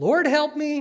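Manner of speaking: high, slow, desperate pleading tone.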